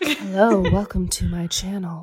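loud, drawn-out, put-on ASMR voice. Retelling what she said, the speaker replies in a soft ASMR voice. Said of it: "that's like your ASMR voice".

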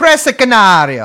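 put-on Italian accent. Naming a dog breed while telling a story: Italian accent. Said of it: "I don't know why I did the Italian accents".

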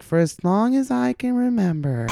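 put-on very high, slow, drawn-out girly voiceover. Recalling a running bit with a friend: imitating a girl's video narration. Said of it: "he would always just go into that voice".

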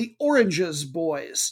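"oranges" stressed and drawn out slowly. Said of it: "not the Orange Boys".

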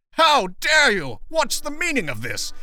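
shrill, shrieking, very high-pitched scream. Narrating Tweed being dragged into the paddy wagon, screaming.

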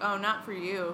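normal talking voice

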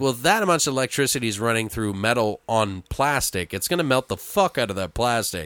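ordinary delivery

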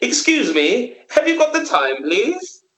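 laid-on-thick posh London accent, very high, sing-song. Mocking another speaker's put-on london accent abroad: imitating a thick posh london accent. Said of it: "I was putting it on thick".

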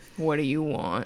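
grunting orc voice. Voicing an orc approached by a prisoner: grunting orc voice. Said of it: "he kinda grunts at you and kinda glares".

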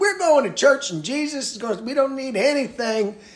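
high-pitched Southern Georgia preacher voice. Quoting churchgoers who insisted on going to church, in a georgia pastor voice. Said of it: "Now I'm sounding like a Georgia pastor".

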